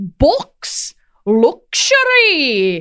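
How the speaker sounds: put-on Yorkshire accent, high and swooping, sing-song. Quoting a Monty Python sketch about one-upping Yorkshiremen: Four Yorkshiremen Yorkshire accent. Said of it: "my only reference for the Yorkshire accent is Monty Python".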